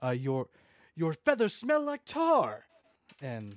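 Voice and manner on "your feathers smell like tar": shouted, much higher and louder. In a tabletop game, a player's character yells an insult at him, yelling. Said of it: "I yell".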